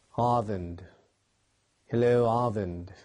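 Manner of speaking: rough, attempted British English accent. Testing an opening greeting to a drawing video: attempted British accent. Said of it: "I'm gonna work on that British accent".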